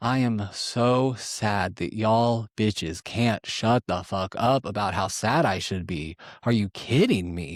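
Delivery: play-acted, furious, livid, drawn out. Retelling a reply to producers who asked how sad he was: imitating own livid retort. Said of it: "I was just livid".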